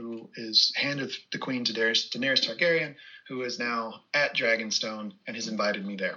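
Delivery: ordinary talk, nothing marked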